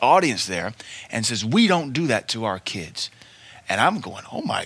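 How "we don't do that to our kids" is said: stern, angry berating scold. Retelling what an audience member shouted at a dad, mock-berating. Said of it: "starts berating this dad".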